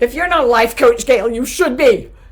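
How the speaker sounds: shrieked out. Addressing Gail directly, shrieking.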